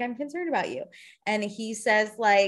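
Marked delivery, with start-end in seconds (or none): 0.0-0.8 earnest, caring, soft and calm concern. Retelling what a woman told a man at dinner, acting out genuine concern. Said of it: "She's genuinely like".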